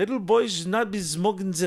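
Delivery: very high, put-on German accent. Acting out a quoted line, in a mock german accent. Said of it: "that's a German making fun of a German accent".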